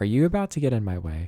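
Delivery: put-on suspicious tone. Retelling own thoughts toward villagers: imitating own suspicious tone. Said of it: "I'm always so suspicious of my villagers".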